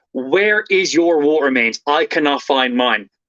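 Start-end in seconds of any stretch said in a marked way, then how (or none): none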